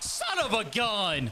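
voice cracking and breaking on the words. Playing a baseball game after getting under a pitch, voice cracking. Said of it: "My voice just cracked".

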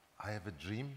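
mild, gentle tone. Speaker retells answering people's question about a famous speech, in a gentle voice. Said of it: "I respond in a gentle voice".

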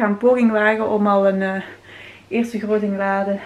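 breathless, winded voice. Sorting and packing a first big load for Cuba, out of breath. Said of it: "maar ik ben buiten adem zelf".

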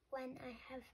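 ordinary delivery, nothing marked

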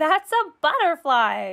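said through a little giggle. A friend corrects another's mistaken word for a butterfly, with a giggle. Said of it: "said Thumper with a giggle".

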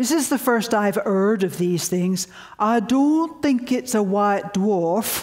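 put-on northern English Yorkshire accent. Retelling a man's first reaction to hearing of these things, imitating his yorkshire accent. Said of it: "I'll imitate his Yorkshire accent".

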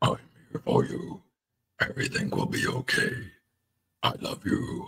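gentle, hushed, whispered, comforting monster voice. Showing how the comforting monster would sound; put-on monster voice. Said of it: "trying to make a monster voice".

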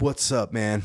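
mock casual, friendly bro tone. Retelling how a doctor greeted the patient: imitating a doctor's casual buddy tone. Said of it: "talking to me like he's just my boy".

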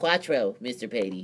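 eager, put-on know-it-all nerd voice. A student answering the teacher's math question, in a nerd voice. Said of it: "thank you, nerd voice".

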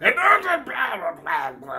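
high, loud put-on garbled cutting-out audio voice.

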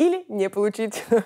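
spoken while laughing through the words. Answering a question about a possible deal and inheritance, laughing. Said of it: "(смеясь)".

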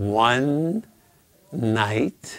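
one and night split by pause. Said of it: "I don't need to keep going".

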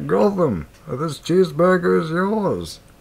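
high, mocking voice. Speaker mimics the other person's voice attempt to make them feel worse; Bane voice. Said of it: "trying to impersonate you".

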